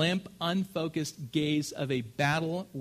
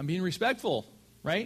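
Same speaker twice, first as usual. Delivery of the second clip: plain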